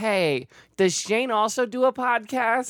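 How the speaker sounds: very high, slow, drawn-out squeaky voice. Retelling a sister's message, quoting her question: Steve Urkel-like voice. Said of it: "Why did your sister talk like Steve Urkel?".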